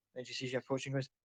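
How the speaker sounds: plain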